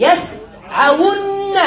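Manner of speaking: يسعون stretched out very slowly.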